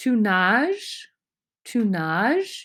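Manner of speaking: pitch rising upward at the end of nages. Explaining french yes-no questions, demonstrating rising question intonation. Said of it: "You can raise the sound of your voice at the end".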